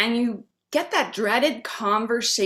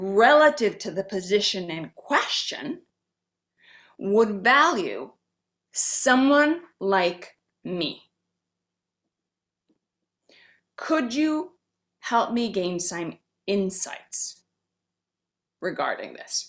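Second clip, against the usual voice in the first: very slow, dictation-pace, deliberate phrasing; 2 semitones lower than usual. Giving listeners the exact words for the interview salary question, very slow and deliberate. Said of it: "I'm going to say it very slowly".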